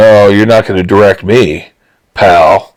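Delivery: ordinary delivery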